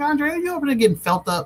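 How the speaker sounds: high-pitched, playful, teasing tone.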